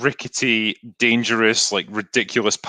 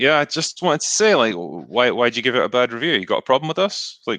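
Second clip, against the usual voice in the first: put-on passive-aggressive tone. Mocking a company contacting sites over bad reviews; mock passive-aggressive tone. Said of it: "just really like passive aggressive".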